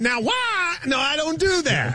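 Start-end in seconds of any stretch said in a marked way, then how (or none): 0.0-0.8 mocking version of own voice, pitched higher. Denying he sounds like a caller's impression, mimicking the impression. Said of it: "I do not go".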